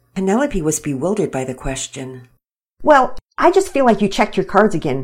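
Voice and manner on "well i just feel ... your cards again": fast, huffy, indignant delivery. Narrator reads a card player answering another player mid-game, in a huff. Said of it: "Pearson said in a huff".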